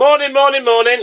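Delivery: mock top-of-the-voice shout, very high and shrill. Recounting calling morning greetings down a corridor, retelling a top-of-voice shout. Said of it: "top of my voice down this corridor".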